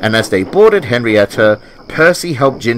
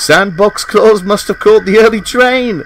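high, chuckling delivery; 9 semitones higher, 4 dB louder than usual. Reading a stranded engine's remark to a friend, chuckling. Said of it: "Jinty chuckled".

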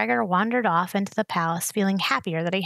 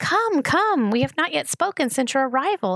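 keen, eager, welcoming, pitched-up; 6 semitones higher than usual. Narrator voicing a man waving a visitor into his chamber, eager. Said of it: "he said eagerly".

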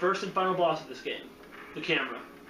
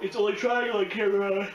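speaking through a yawn; 2 semitones higher than usual. Explaining which modes are available, while yawning. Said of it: "Sorry, I yawned".

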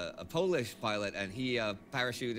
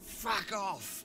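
put-on, attempted, very high British accent; 10 semitones higher than usual. Retelling his reply to pitchfork-carrying locals who thought he was german, in a british accent. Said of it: "in the best British accent I could".

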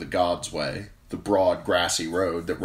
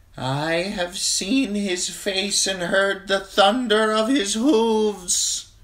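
high, thin, wavering, quavering voice; 3 dB louder than usual. Narrating a story, the crone proclaims to her handmaids in a thin, wavery voice. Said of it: "she proclaimed in a thin, wavery voice".

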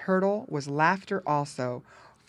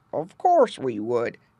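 gruff, loud voice; 6 semitones lower, 5 dB louder than usual. Reading a story, a frog answers Jerry and Cousin Paddy: gruff Grandfather Frog voice. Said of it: "said a gruff voice".

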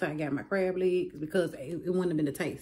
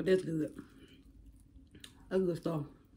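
mouth full, chewing, quieter; 4 dB quieter than usual. Eating on camera and talking between bites, with mouth full. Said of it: "Excuse my mouth".

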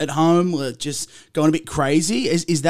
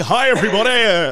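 annoying, obnoxious radio announcer voice; 4 semitones higher, 4 dB louder than usual. Imitate someone walking everywhere greeting people in an obnoxious radio announcer voice. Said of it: "talking like an obnoxious radio announcer".

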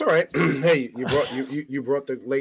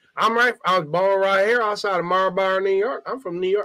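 put-on Southern accent, higher pitched; 7 semitones higher, 4 dB louder than usual. Retelling a chat with a woman at a bar, imitating her Dixieland accent. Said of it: "Why the Dixieland accent?".

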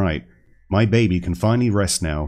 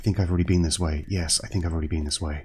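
hushed whisper; 5 dB quieter than usual. Gamer searching the corridors, not wanting to disturb the baby, whispering. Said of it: "Don't know why I'm whispering".

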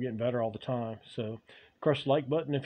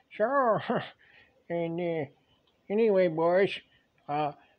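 put-on old woodsman, lumberjack character voice; 4 semitones higher than usual. Addressing the boys, the performer turns into an old lumberjack voice. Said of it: "TURNS INTO AN OLD LUMBERJACK".

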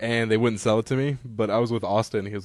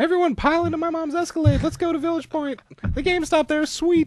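very high, squeaky cartoon voice; 4 dB louder than usual. Asked to pretend to be fourteen, the speaker answers in a Mickey Mouse voice. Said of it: "I sounded like Mickey Mouse".

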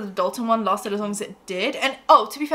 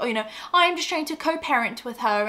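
put-on British accent. Imitating a man claiming he only wants to co-parent: put-on British accent. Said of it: "why did I give him a British accent?".

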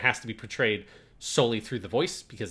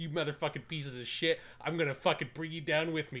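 acted spiteful taunting, higher and quieter; 5 semitones higher, 7 dB quieter than usual. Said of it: "the way he's talking is like".

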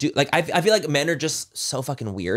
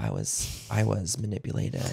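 acted, solemn, hushed, breathy somber whisper; 4 semitones lower, 9 dB quieter than usual. Mocking a woman's public statement after backlash, imitating a somber tone. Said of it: "in like this somber tone".

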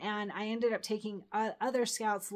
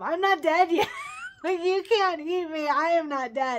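very loud, high, swooping shouted yell; 8 semitones higher, 9 dB louder than usual. Retelling a hard bike ride with vultures circling overhead: retelling a yell. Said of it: "I'm like yelling up to them".

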